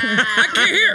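loud, exasperated, flipped-out outburst. Imitating a friend who flips out over inconveniences: imitating someone flipping out. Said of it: "he flips out".

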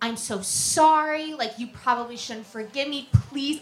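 put-on begging, pleading tone. Retelling a phone apology from him: imitating someone begging. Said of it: "begging me".

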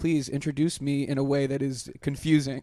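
usual speaking voice

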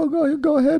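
very high crying voice.

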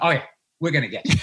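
imitated smug cigar smoker. Retelling a cigar commercial, imitating a smug cigar smoker. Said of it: "He's just going".

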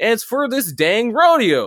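very slow, very high, swooping ranch-hand voice. Recalling a man talking over students about parking, imitating a ranch hand. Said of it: "talking like he's, you know, some ranch hand".

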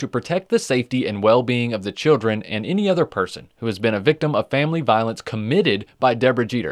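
plain

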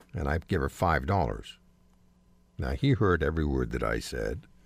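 ordinary talk

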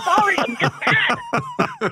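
mock, slow, high-pitched, laughing voice.

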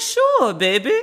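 terrible fake New Orleans accent. Quoting the princess's reply when asked for a hug, in a bad New Orleans accent. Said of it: "That's my version of a New Orleans accent".

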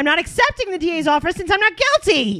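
very high, loud, pushed voice. Quoting Teen Mom Farrah's statement on her charges: Teen Mom Farrah impression. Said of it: "That was a good impression".

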